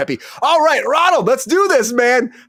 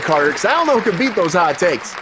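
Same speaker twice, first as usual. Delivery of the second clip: normal talking voice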